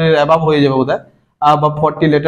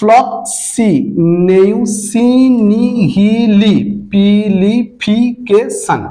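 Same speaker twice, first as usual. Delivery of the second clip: very slow, spelled out syllable by syllable. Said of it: "এটাকে যদি সিলেবালি যদি উচ্চারণ করতে থাকো".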